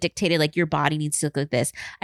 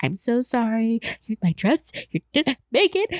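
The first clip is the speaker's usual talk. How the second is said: mock tearful, high-pitched sobbing voice; 5 semitones higher than usual. Retelling apologizing to a friend the night before her wedding: imitating own sobbing.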